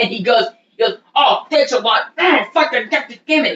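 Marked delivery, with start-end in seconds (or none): 1.1-3.6 full-on exasperated, high, drawn-out angry meltdown outburst. Retelling a man's outburst after a computer update, imitating an angry meltdown. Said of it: "he has this big fucking meltdown".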